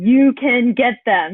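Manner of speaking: very slow, loud, drawn-out urging coach yell. Retelling how the coach yelled encouragement during the race: imitating a coach yelling. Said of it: "he's just yelling at me".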